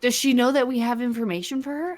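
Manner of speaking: hushed whisper. Playing a character who whispers a question to a companion: whispering to another character. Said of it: "whisper to Daya and be like".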